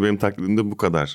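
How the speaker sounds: normal talking voice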